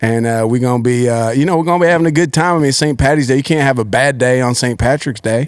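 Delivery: put-on Southern US accent.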